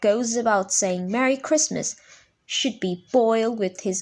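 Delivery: plain reading voice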